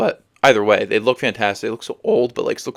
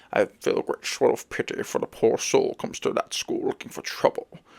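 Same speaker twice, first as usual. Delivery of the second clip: terrible breathy whispered voice, done badly; 6 dB quieter than usual. Retelling a line from a movie scene: terrible Patrick Stewart impression. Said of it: "That's my terrible Patrick Stewart impression".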